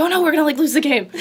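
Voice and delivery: put-on frantic panic, high and rushed. A teammate describing their pregame ritual going wrong, imitating a panicked freak-out. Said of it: "she like freaks out and is like".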